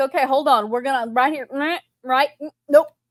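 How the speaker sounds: snippy, bossy, bitchy delivery. Retelling own past words to the other speaker: imitating own bitchy tone. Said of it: "I got pretty bitchy with you about it".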